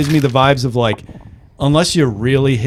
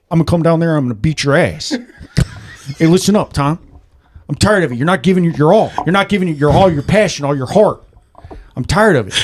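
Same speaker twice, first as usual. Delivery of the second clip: intense, in-your-face, confrontational delivery; 4 semitones higher than usual. Imagining Shia LaBeouf calling up to confront Tom, the speaker does a Shia LaBeouf impression. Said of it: "He's like".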